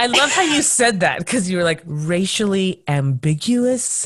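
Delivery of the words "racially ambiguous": mock slow, drawn-out delivery. Speaker repeating back how another guest said a phrase, imitating someone saying it slowly. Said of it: "you said it in this slow way".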